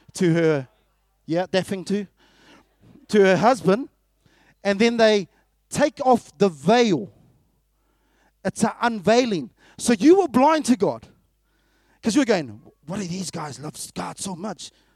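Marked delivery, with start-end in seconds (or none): 12.9-14.7 very quiet, hushed, put-on Mexican accent. Acting out the listener's past words, the speaker puts on a Mexican accent. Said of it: "In like a Mexican accent".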